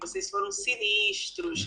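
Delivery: put-on Rio Carioca accent, s sounds become sh. Retelling an answer to students, spoken like in Rio: carioca accent with sh sounds. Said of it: "vou falar igual lá no Rio".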